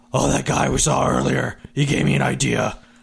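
gruff, rough superhero-style voice. Player voicing a zealot character in war aspect: gruff Batman voice. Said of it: "Since I'm a zealot, I'm going to start being my aspect of war. So hard red scales. / Buff up, angry, hard looking red scales. / No, I had like a gruff [name] voice".

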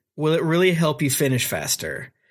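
put-on deadpan cartoon voice. Describing an anime filler arc and quoting Naruto's line, mock-deadpan Naruto impression. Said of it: "In such a deadpanned way".

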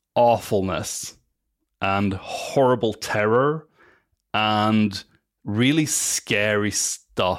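slow, dramatic, shocked, each word drawn out.

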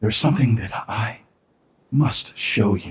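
whispered put-on character voice. Game master voicing a character leaning over to a player, Zori whispering in your ear. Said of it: "She leans over and she whispers in your ear".

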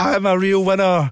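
acted-out high scream, dragged long. Retelling how Kenny was asked to say the magic words and screamed them, acting out a scream.

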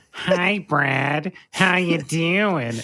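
put-on high nasal voice. Retelling how his wife mimicked his intros, in a high nasally put-on voice. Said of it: "this like High nasally".

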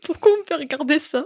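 high, blubbering, sobbing whine. Recalling running off to the bedroom crying over a sad film, retelling sobbing. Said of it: "je me suis barrée dans ma chambre en chialant ma race".

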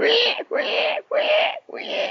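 slow, frightened little pig squeals. Narrator voicing the little pig inside the rolling churn: frightened piggy squeal. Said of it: "the little pig inside was squealing away with fright".

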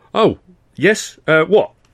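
high, flustered, confused splutter. Narrator voicing a character's confused reply to a question: spluttering in confusion. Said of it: "he spluttered in momentary confusion".

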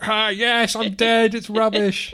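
high, loud, very slow, drawn-out comic put-on voice. Acting out a dead man's photo line as a Dom Jolly impression. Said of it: "That's my Dom Jolly impression".

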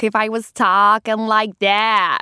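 put-on New York accent. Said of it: "New York".

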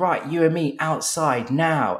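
slow high shout. Retelling a fight at a shoot, quoting Tom, imitating Tom's shouted challenge. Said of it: "tom goes".

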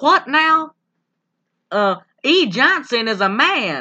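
put-on, slow, high-pitched southern drawl. Recounting a scene, the speaker quotes a man who suddenly gets a southern accent. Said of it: "this is when he gets the southern accent".

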